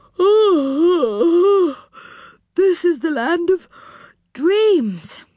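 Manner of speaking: sleepy, slow, drawn out with a long "oh". One of the group, yawning after sand is scattered over them, sleepily. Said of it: "said Moonface sleepily".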